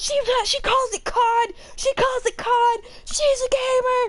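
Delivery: put-on excited child's voice.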